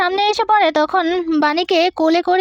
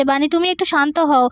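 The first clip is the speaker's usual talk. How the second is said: usual speaking voice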